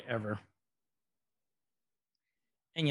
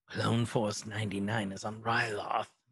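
low, slow, very whispery rasp. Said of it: "his very whispery voice".

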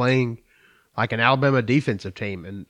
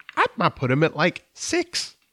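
high-pitched voice, going higher; 5 semitones higher than usual.

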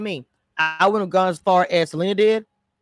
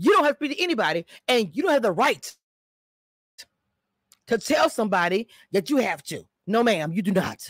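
firm, stern, no-nonsense motherly voice; 2 semitones higher, 3 dB quieter than usual. The speaker scolds someone, showing how they talk in their mom voice. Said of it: "in my mod voice".

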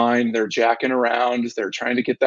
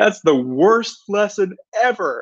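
put-on acted-out upset child's high, drawn-out scream; 9 semitones higher than usual. Speaker retells Brock's answer after the fort was torn apart, retelling a scream. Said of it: "and was screaming at me".

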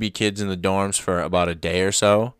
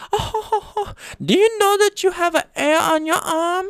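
put-on very high-pitched girlish delivery. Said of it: "she goes".

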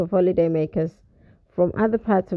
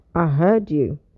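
cool, lower; 2 semitones lower than usual. Answering her urgent complaint while turning the car, he replies coolly. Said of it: "he replied coolly".

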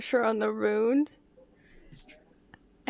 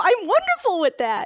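louder, higher excited repeat. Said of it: "Oh, wow".

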